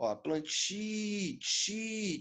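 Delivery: soft, slow plantio with the TI syllable isolated.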